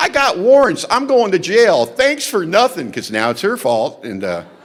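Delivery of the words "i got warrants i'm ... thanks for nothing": very high-pitched, loud screamed rant. Retelling screaming at the sister after police were called: imitating own screaming. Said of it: "I start screaming at my sister".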